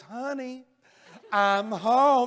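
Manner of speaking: small, pretty-sounding little voice. Retelling how she spoke as she came into the house; imitating her pretty little voice. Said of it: "with that pretty little voice of hers".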